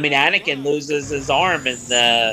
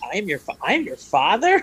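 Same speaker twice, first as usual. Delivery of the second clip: mock incredulous, stumbling, high swooping stunned disbelief; 5 semitones higher than usual. Retelling rereading a shocking line in a book: imitating own stunned disbelief. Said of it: "I did reread the line, like, a hundred times".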